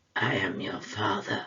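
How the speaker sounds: bad villain voice, pitched as deep as possible. Quoting a film line in a Darth Vader impression. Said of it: "That's the best impression I can do".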